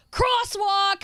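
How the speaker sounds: imitated yell. Retelling the cyclist's reply from his bike: imitating a cyclist yelling. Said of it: "the gentleman on the bike turned around and yelled".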